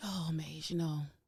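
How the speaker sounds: worn-out, weary, sleepy-sounding voice. Co-host answering the host's morning greeting on the show, in her tired voice. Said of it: "Ruthie, what voice was that?".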